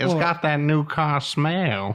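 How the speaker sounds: put-on animated sitcom cartoon character voice. Showing an impression after being asked for a TV character: Cleveland from Family Guy voice. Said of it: "kinda do Cleveland from Family Guy".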